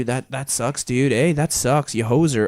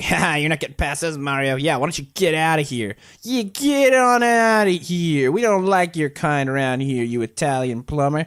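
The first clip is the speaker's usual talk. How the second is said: put-on angry, bullying, taunting jeers; 3 semitones higher than usual. Recalling playing Paper Mario as a child, voicing the Toads blocking the way: mock-angry Toad taunts. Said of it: "stupid, angry toads were blocking the way".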